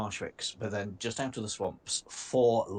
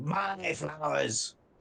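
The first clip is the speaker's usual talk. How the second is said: incoherent, high, rough, furious raging shout; 6 semitones higher than usual. Giving what he yells in Draconic: incoherent furious yelling. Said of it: "he's basically he's just yelling".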